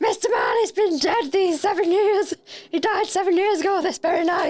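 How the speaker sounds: very high, hyped-up robotic character voice. Reading Scrooge's lines in a Christmas Carol read-through: like a Dalek on a sugar high. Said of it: "You sounded like a Dalek that was on a sugar high".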